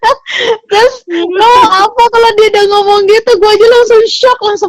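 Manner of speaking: high, loud laughter full of disbelief.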